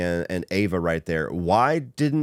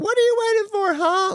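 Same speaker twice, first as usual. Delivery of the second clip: acted-out shrill scream, very high; 4 dB louder than usual. Recapping a movie, speaker quotes a character's line from the trailer: retelling a scream. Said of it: "And then she screams out".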